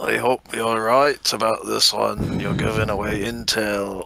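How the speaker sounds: whispering through clenched teeth. Game master voices Spellbeard speaking to the party, Spellbeard whispering through teeth. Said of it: "through his teeth, Spellbeard whispers to you guys".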